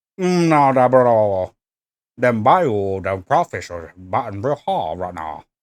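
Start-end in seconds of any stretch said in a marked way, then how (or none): 2.2-5.4 low, put-on, Cajun-flavored Bayou accent. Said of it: "more Bayou".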